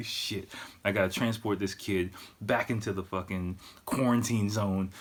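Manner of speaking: plain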